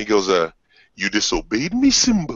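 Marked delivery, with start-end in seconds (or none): 1.0-2.4 put-on deep, regal lion voice. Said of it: "you seen Lion King, right? Where he goes".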